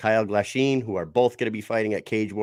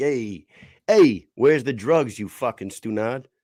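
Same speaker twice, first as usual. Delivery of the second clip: put-on Rhode Island accent; 2 semitones higher, 4 dB louder than usual. Joking with a co-host about how a hero should sound, Batman in Rhode Island accent. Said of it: "should have is a Rhode Island accent".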